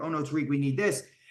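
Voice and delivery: ordinary delivery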